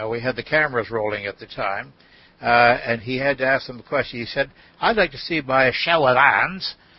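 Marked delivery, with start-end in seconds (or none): 4.8-6.7 put-on, attempted Australian accent. Retelling what he asked the group on camera, in a put-on australian accent. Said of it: "I'm trying to do my Australian accent here".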